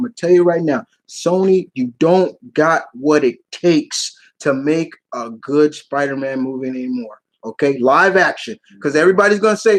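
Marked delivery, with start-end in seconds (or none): 0.0-7.2 earnest, serious tone in a low, slow voice. Getting serious with the guys watching, dropping into a lower serious voice. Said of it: "I'm gonna go in my lower voice right now".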